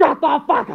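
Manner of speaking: hot-tempered, furious, high-pitched angry delivery. Answering another speaker who says to calm down: angry shout. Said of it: "calm down".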